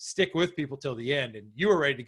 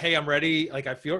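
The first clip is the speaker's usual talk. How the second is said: ordinary talk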